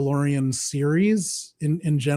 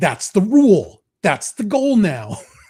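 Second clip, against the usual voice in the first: put-on mocking voice, higher and louder; 5 semitones higher, 6 dB louder than usual. Trying out a practiced impression to entertain a co-host: Tucker Carlson impression. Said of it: "does a really funny Tucker Carlson bit".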